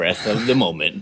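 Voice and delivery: dramatic, trailer-style movie voiceover narrator voice. Riffing with the other speaker on living in the moment, movie voiceover voice. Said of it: "are you doing a movie voiceover right now?".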